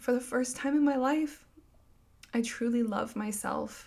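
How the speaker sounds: tearful, choking up, pitched high. Speaker sharing about her pregnancy and healing, about to cry. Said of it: "I am going to cry".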